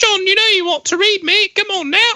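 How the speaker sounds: put-on very high, unrefined working-class British accent, child-like. Acting out what they said to John as he walked by, unrefined put-on British accent. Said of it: "that was not an intelligent British accent".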